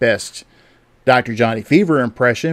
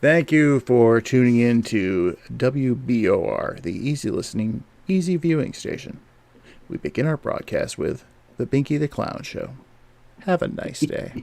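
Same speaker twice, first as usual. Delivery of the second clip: smooth, smarmy, easy-listening radio DJ voice; 4 dB quieter than usual. Taking up the other speaker's go-ahead, doing a smooth radio dj voice. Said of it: "I could do my best smooth radio D J voice".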